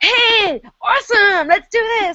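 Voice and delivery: mock, very high, loud, slow, gushing American cheer. Retelling what loud american people at an event sounded like: imitating loud enthusiastic americans. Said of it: "listening to all these people be like".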